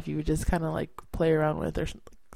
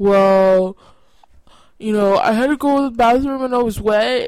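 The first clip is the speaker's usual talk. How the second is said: put-on stutter, louder and higher pitch; 6 semitones higher, 9 dB louder than usual. Retelling Aiden's answer when asked about the tub, imitating Aiden's stutter. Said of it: "imitate him with the stutter".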